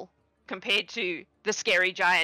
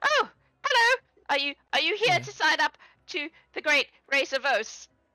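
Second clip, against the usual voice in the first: put-on frightened, nervous, terrified young man, high voice; 9 semitones higher than usual. Game master voicing a frightened boy who signs teams up for a race: terrified young man voice. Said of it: "terrified-looking boy. he's maybe 18".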